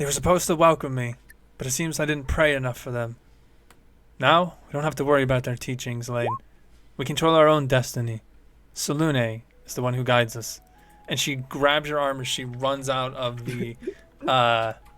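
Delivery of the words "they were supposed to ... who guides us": cold, icy, chilly, unmoved delivery. Voicing Prim after she kills a man: cold, icy delivery. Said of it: "she looks back with a cold stare and goes".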